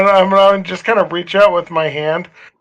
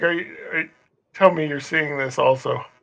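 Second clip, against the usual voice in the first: quiet, hushed, soft whisper; 3 semitones lower, 9 dB quieter than usual. Playing a game character, eyes fixed on something, whispering to a companion. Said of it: "I'm gonna just kind of whisper to Morthos".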